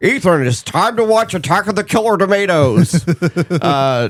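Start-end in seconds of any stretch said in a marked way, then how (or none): 0.0-3.1 put-on old-timey 1920s drunk man voice, higher. Acting out a dad on Christmas morning after presents, fake dad voice, 1920s drunk-like. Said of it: "I'm gonna do a fake voice for for your dad".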